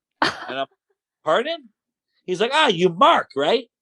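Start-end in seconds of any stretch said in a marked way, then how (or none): 2.5-3.6 put-on Italian accent, halting English. Retelling a man who mistakes his name, the speaker imitates him in an Italian accent. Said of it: "in his Italian accent".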